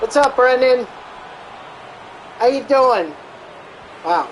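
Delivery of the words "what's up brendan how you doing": classic New York accent. Greeting Brendan, asking how he's doing, in a New York accent. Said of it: "There goes my New York accent".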